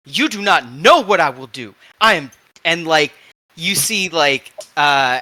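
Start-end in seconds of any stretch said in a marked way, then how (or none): 0.1-2.3 angry scolding tone, higher and louder. Voicing Chocolat in the med bay scolding Luke: angrily scolding. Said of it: "Chocolat tearing Luke just an absolute new one".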